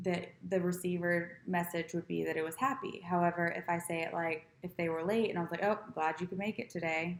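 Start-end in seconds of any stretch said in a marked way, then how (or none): 5.9-7.2 deadpan, flat, uninterested, indifferent tone. Greeting someone who arrived late, showing feedback tone: indifferent tone. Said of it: "it sounds more indifferent".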